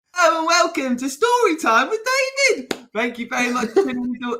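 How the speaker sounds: very high, bad, over-the-top, full-energy presenter voice. Asked to give full energy, imitating own high-pitched over-the-top voice. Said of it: "it was so high-pitched and bad".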